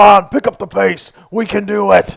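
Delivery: shrill, very high, full-volume yell. Imagining a character at the back of the group: imitating Brick yelling. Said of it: "just yelling, like".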